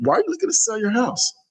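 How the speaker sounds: curious, interested tone. Showing how to ask someone why they want to sell their house: curious question. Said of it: "do you hear my voice inflection and how I went about asking the question? That I'm really curious".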